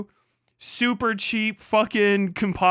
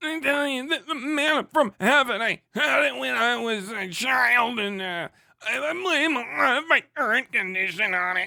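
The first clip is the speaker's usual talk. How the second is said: sputtering, stalling, engine-like voice; 4 semitones higher than usual. Joking about manna from heaven: RFK Jr. impression. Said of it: "I'm starting to get the R F K down".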